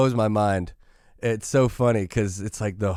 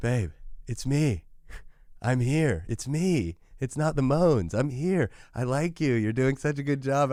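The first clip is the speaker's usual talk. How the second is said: brightening, chirpy, perky, sweet voice; 4 semitones higher, 4 dB quieter than usual. Retelling how his wife perks up on a drive: imitating Anna perking up. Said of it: "she kinda perks up and she looks at me and she goes".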